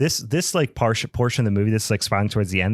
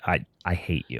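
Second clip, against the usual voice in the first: mock pure venom, blunt, with no hedging at all; 5 semitones lower, 6 dB quieter than usual. Retelling how Kate answered while watching the movie: imitating Kate's venomous tone. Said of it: "unequivocally just said".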